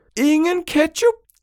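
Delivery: very high, shrill, full-lunged all-out scream. Reading a story, a boy shouts at his father: shouting as loud as possible. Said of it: "Råbte Valdemar alt, hvad han kunne".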